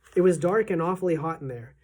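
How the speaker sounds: ordinary delivery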